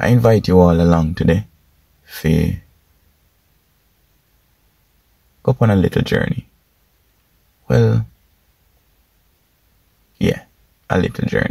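drawn-out, very slow, unhurried speech. Opening a video and addressing viewers, speaking very slowly. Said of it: "why am I speaking so slow?".

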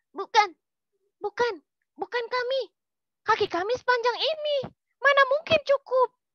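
frightened. A narrator reads the rabbit answering the crocodile's question about the shoe; frightened. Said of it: "Kelinci ketakutan".

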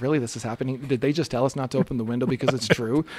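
ordinary delivery

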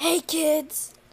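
put-on creepy old grandma voice. Role-playing a grown-up greeting the kids, in a scary old grandma voice. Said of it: "Why do you talk like that? It's scary".

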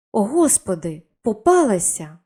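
crying out suddenly, on the spot. Narrating a lady as an inspector unexpectedly walks in, exclaiming. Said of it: "Вигукнула леді Мілісент".

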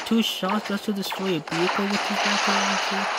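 usual speaking voice

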